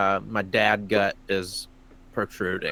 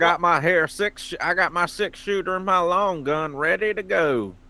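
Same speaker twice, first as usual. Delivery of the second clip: put-on Old West cowboy accent, pitched a bit high; 9 semitones higher than usual. Playing a character in a group's western story about a kidnapping: cowboy accent. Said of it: "These are the accents".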